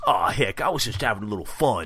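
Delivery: horrible put-on Brooklyn accent, tough-guy voice. Recapping a Ninja Turtles scene, giving Raph's reply to Splinter: bad Raph voice. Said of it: "That was a horrible Raph voice".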